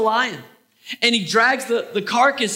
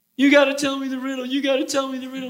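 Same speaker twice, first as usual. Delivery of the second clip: crying, tearful, pestering, repetitive nagging; 3 semitones higher than usual. Retelling the Bible story, voicing the woman nagging Samson: imitating crying, nagging woman. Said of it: "she's crying. She's nagging Samson".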